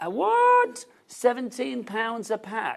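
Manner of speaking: carried-away excitement. Reacting to the price of a pack of dust masks, excited, voice rising higher. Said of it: "voice is getting higher and higher".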